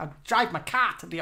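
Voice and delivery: Bostonian accent. Hosts joke after greeting a listener from boston, in a boston accent. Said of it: "We love the Boston accent".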